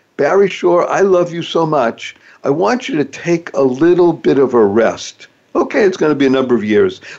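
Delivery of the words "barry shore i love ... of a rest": normal talking voice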